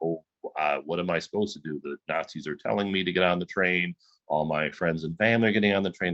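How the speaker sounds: ordinary talk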